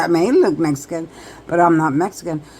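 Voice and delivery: plain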